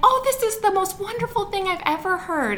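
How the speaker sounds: put-on very high, excited little girl voice, squealed joyfully.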